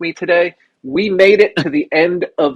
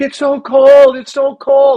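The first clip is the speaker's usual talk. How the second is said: mock very high, very slow sobbing whine; 10 semitones higher, 5 dB louder than usual. Retelling how he cried while shoveling cold snow: imitating someone crying. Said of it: "he's like crying".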